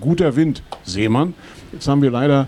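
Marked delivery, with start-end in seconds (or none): none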